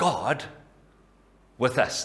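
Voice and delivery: heavy emphasis landing on the word God. Reading God with us three ways, the first: stress on God. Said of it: "The emphasis first on God".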